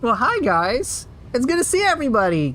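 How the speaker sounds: high, sing-song put-on voice. Doing a bit with a put-on higher-pitched voice. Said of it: "Let me raise the pitch of my voice a little higher".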